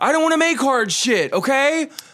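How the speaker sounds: put-on very high-pitched, loud, drunken hollering. Describing a drunk man yelling at a lady, retelling a drunk man's yell. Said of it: "he's yelling at this lady".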